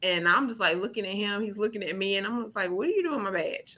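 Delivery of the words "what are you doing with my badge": snapping, accusing, on-the-attack tone. Retelling finding a coworker holding the badge: imitating own accusatory tone. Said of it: "I went straight into some type of accusatory, like, tone".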